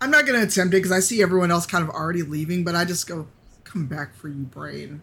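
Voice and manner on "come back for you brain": sullen, moody, brooding delivery. Speaking in character as everyone else starts leaving: moody. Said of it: "that sounds very moody".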